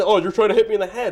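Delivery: mock shouting, yelling. Retelling what a baseball player shouted after being hit at: imitating someone yelling.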